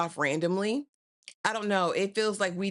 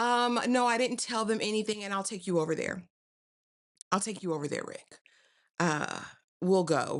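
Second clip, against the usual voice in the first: grudging, half-hearted, reluctant and hesitant; 2 semitones higher than usual. Retelling a woman's answer in a show scene: imitating someone speaking reluctantly.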